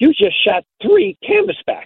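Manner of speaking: high, excited, astonished exclamation.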